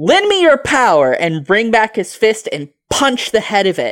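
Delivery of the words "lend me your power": high, shouted, rallying battle cry. A player's character pulls out his shovel and shouts a battle cry.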